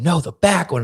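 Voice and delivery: acted whispering. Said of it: "And we're whispering".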